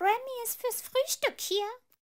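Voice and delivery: shrill, loud, very high, belted elf voice. Narrator voices an elf at the door, in a high Remy elf voice. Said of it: "sagte eine hohe Stimme".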